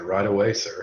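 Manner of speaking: snide, sarcastic, mocking tone. Replying in character to an order to hurry along: sarcastic. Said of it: "Give him a real sarcastic salute and say".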